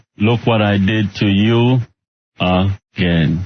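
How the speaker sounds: natural, own Jamaican accent. Saying a requested line for the caller: jamaican accent. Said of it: "with that accent of his".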